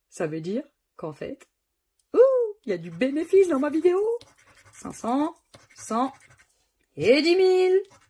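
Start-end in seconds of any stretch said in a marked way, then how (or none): 4.7-7.8 high, loud, thrilled and overjoyed shout. A video maker calls out a number to her viewers, shouting excitedly. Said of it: "il faut que j'arrête de crier comme ça".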